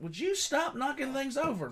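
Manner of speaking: scolding, pitched way up.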